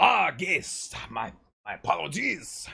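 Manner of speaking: put-on French accent, high-pitched and slow. Voicing the bellboy in a French accent, as chat asked. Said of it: "French, okay, I will do my best".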